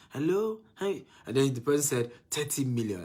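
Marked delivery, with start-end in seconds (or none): 0.1-1.0 put-on childlike, high, babyish little voice. Recalling how a caller greeted the speaker on the phone, baby voice. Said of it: "the voice that was talking to me was like a baby voice".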